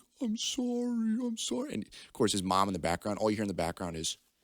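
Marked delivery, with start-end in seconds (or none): 0.2-1.7 mock very high, slow, drawn-out sobbing. Retelling how a kid apologized to his dad: imitating someone crying.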